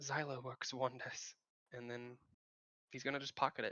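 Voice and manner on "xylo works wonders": muttered under the breath, much quieter and slower. The narrator describes a character blinking out a tear, then speaks under his breath. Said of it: "he's gonna say under his breath".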